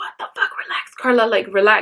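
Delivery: put-on shaky, tearful voice, calming itself while crying. Retelling talking to herself at a doorbell while crying and shaking: retelling talking herself calm while crying. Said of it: "talking to myself out loud to relax".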